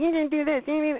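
high, screaming, shrieking, accusing outburst. Mocking phone girls who scream at callers: imitating someone screaming. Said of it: "start screaming".

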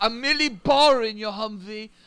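poor fake Scottish accent. Quoting a movie line to a fellow speaker, in a bad Scottish accent. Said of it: "that was not a good Scottish accent".

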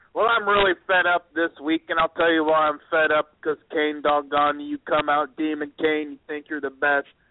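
flat, deadpan monotone droned dead level. Mocking a wrestler's boring promo: imitating Seth Rollins' monotone. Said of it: "I call him Monotone Billy".

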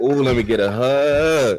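drawn-out, motherly auntie voice. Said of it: "you know when they talk with it".

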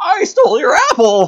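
very high, loud, stretched, wild little hermit voice. Imagining a scene where Gurgi pops out: Gurgi voice. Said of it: "Gurgi pops out and is like".

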